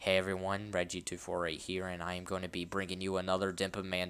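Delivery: flat, dull, unenthusiastic monotone with no energy. Imitating how they opened their videos, imitating own unenthusiastic intro. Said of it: "rather than just being like, ... That's kind of like what I sounded like".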